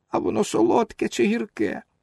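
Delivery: weepy, whiny, tearful, creaky voice. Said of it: "спитав плаксивим голосом".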